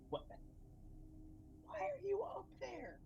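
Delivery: very high-pitched stage whisper. In a game, the speaker calls up to another player in a loud whisper. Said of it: "am like whispering".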